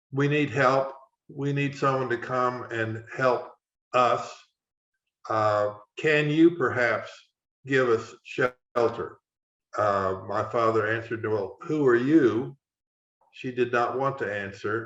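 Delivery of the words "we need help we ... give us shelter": normal talking voice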